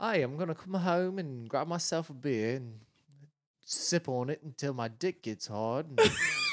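English accent, delivered slowly.

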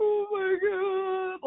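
put-on very high sobbing cry, god drawn out. Recalling being given a tassel at a year-end banquet: retelling sobbing. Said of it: "I'm like sobbing".

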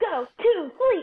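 high, loud scream in character voice. Voicing a character casting magic missile: screaming in character. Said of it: "he's just gonna be screaming".

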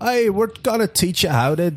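failed, bad Geordie accent, pitched very high. Imitate the Geordie guy from a YouTube fish-filleting tutorial in a bad Geordie accent. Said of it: "which is like a Newcastle accent".

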